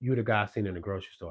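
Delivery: ordinary delivery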